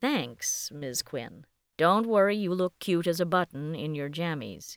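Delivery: ordinary delivery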